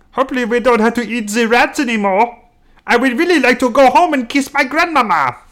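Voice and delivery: fake, bad German accent, very high-pitched. Speaker tries again after a failed attempt: bad german accent. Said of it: "So bad".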